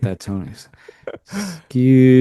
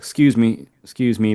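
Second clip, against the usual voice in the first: slow, weighty, manly-sounding delivery. Showing a simple way to say excuse me when squeezing past someone, manly tone. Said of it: "maybe manly, that tone".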